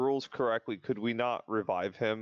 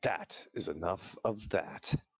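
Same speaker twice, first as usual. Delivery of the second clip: icy, very cold, low delivery; 4 semitones lower, 4 dB quieter than usual. A player's character runs another character through the chest, speaking in a very cold tone. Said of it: "in a very cold tone say".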